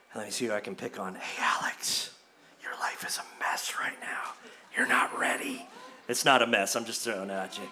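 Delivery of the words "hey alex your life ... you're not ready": hushed, breathy, close whisper. Voicing the evil one tempting a listener: whispering as the evil one. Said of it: "the evil one will whisper in your ear".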